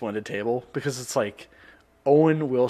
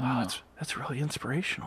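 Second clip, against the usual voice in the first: mock loud whispering; 2 semitones higher, 7 dB quieter than usual. Imitating a radio host reacting to something: imitating a loud whisper. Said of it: "loud whispering about food".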